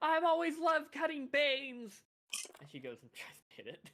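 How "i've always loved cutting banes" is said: high, slow battle yell. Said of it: "Just hear [name] yell".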